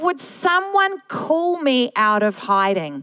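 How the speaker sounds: ordinary talk, nothing marked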